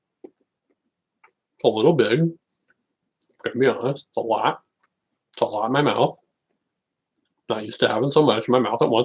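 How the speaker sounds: talking with mouth full of food. Eating a frozen banana while talking: talking with mouth full. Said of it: "talk while I got it in my mouth".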